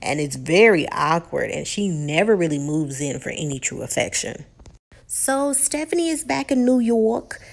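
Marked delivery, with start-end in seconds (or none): 5.1-7.4 best-attempt put-on New York accent, pitched up. Recounting a woman's story, speaker puts on a New York accent. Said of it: "That was the best accent I can give you".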